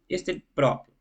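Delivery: plain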